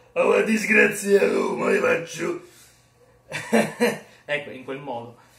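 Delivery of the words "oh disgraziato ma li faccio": high, loud, slow Roman dialect accent. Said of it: "quando io faccio il romanaccio".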